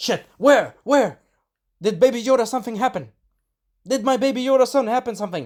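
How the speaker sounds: put-on high, frantic, panicked scream. Recapping an episode, acting out the Mandalorian's reaction: Mandalorian's mock-panicked scream. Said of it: "sorry for screaming".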